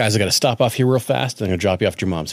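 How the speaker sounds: ordinary talk, nothing marked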